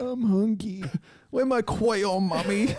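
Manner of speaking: put-on very high, slow, babyish baby-talk voice. Imitating someone who talks like a baby: imitating baby talk. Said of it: "He would talk like a fucking baby".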